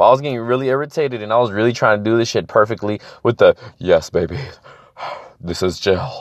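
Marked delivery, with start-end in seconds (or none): 3.8-6.2 deep, breathy voice, drawn out and slow. Retelling how he tried to do the line perfectly, deep Johnny Bravo voice. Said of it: "with the deep ass Johnny Bravo".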